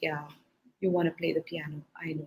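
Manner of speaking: bored, flat, disinterested going-through-the-motions tone. Showing how she did not answer a repeated wish, disinterested tone. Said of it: "I didn't say it with disinterest, like".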